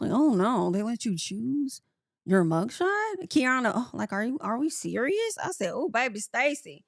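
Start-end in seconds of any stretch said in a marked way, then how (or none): 0.1-3.3 put-on woman's mumbling, muttering under the breath. Act out Stacy's reaction to a mugshot, imitating someone mumbling under her breath. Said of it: "mumbling under her breath".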